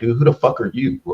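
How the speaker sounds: play-acted, irritated, pissed-off dismissive tone. Imagining a channel owner's reaction to unwanted advice, the speaker plays someone mock-pissed-off. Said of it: "and you would be pissed off at me".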